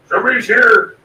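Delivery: orc voice, pitched a little high. Narrating to the players, voicing someone hidden in the mushrooms in an orcish voice. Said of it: "You hear a uh, orcish voice say".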